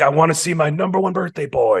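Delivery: high, crazed, unhinged psychotic tone. Recapping a story, quoting the dad greeting his son, imitating a crazy, psychotic tone. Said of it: "he says it kind of crazy like".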